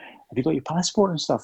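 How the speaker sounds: hushed, very quiet, soft, near-murmured voice. Retelling what Ken asked during filming, imitating Ken speaking quietly. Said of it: "he used to speak very, very quietly".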